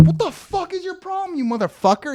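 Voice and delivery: put-on shrill, very high, furious angry shout. Retelling yelling at a much bigger man, retelling own angry yell. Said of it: "I was yelling at him".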